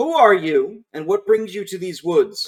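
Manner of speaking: loud, high, soldier-like shout. The narrator voices an armed soldier calling out to the player, soldier shouting. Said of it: "One of them shouts to you".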